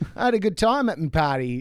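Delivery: put-on Australian-accented voice. Retelling what a man said about his party, in an Australian accent. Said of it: "I love this Australian accent".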